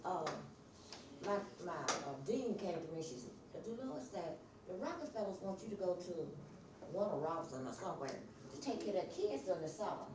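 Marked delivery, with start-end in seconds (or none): none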